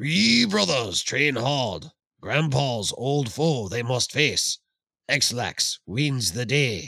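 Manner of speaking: put-on deep, sage ninja master voice. Reading a haiku aloud, in a Ninja Master voice. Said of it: "I will channel my Ninja Master voice".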